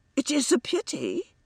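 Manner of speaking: very high, slow, sincerely sympathetic voice. A man speaks to a woman who looks horrified; with real sympathy. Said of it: "Brooke with real sympathy".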